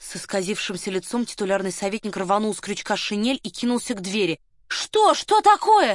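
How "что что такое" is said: very high-pitched, hysterical, frantic screaming shriek. Varya rushes after the titular counsellor as he runs for the door, frantic scream. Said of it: "истошно закричала Варя".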